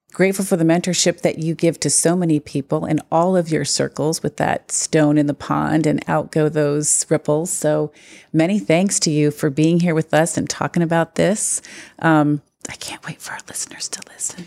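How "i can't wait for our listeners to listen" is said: hushed whisper. Host thanking a guest at the end of the talk, whispering. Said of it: "Why are you whispering?".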